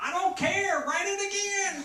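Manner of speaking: shrill, very high, very loud barking voice. Speaker retelling how Nate answered him, imitating Nate's very high voice. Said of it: "who had a very high voice".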